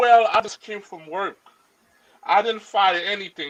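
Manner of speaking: normal talking voice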